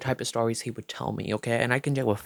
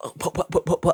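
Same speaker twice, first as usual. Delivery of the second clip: higher-pitched put-on stuttering stammer; 5 semitones higher than usual. Retelling how the other person stammered when accused: imitating someone stuttering.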